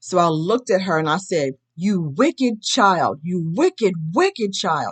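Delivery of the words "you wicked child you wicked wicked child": angry, furious yelled outburst. Recounting a dream, yelling at a child in the car: retelling a furious yell. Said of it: "So I'm yelling in the car".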